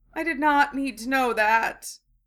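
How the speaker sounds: sounding faint. Ron reacts after Draco confirms what he told them, sounding faint. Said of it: "sounding faint".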